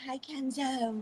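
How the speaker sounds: soft, overdone flirtatious tone. Describing a woman greeting Kenzo, imitating her overly flirty voice. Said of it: "she was like being overly flirty".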